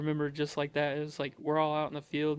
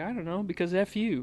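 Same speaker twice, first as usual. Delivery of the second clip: casual, indifferent, nonchalant, offhand drill sergeant voice; 4 semitones higher than usual. Retelling a drill sergeant's reply to a recruit's question: imitating a nonchalant drill sergeant. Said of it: "he was very nonchalant".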